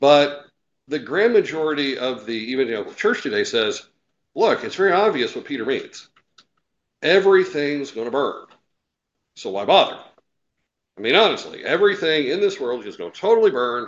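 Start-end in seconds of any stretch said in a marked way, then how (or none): none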